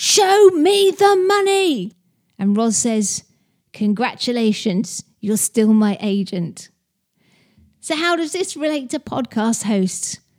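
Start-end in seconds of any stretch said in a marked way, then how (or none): 0.0-1.9 very high, stretched-out, drawn-out yell. Speaker retells a scene where Jerry shouts to Rod; Jerry shouting. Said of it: "And Jerry shouts".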